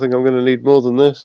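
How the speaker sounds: quiet under-breath mutter. A character looks at a bat and speaks to himself, muttered under breath. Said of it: "under my breath".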